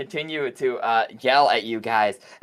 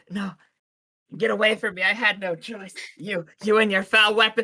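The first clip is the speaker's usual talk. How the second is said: high, scared, frightened, recoiling voice; 9 semitones higher than usual. Voicing a foe as a player attacks her: frightened foe. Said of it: "she's like".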